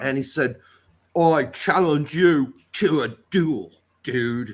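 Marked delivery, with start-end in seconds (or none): 1.2-4.5 slow drawl with every word drawn out. Retelling how Keanu Reeves delivered a line in a French film: imitating Keanu Reeves. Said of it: "that's what he sounded like".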